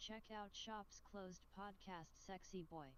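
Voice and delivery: put-on female voice-over announcer voice. Trying to copy the voice-over lady's ad read: imitating the voice-over lady. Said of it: "I'm gonna try it again".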